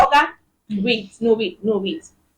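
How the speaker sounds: ordinary delivery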